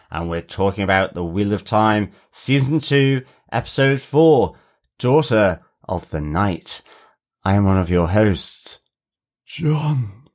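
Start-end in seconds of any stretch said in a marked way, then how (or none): 7.4-10.1 put-on breathy character voice. Podcast host introducing himself at the show's start, in a breathy Rand impression. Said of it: "Was that your breathy impression of Rand".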